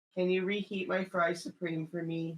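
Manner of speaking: put-on guilty voice like a six-year-old. Asking another person for a favor, sounding like a guilty six-year-old. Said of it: "why do you sound like a six-year-old who's done something wrong".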